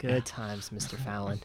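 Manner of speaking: heavy, slow, syrupy dripping sarcasm. Remarking on a past blackface sketch by Mister Fallon: dripping with sarcasm. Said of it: "that is dripping with sarcasm".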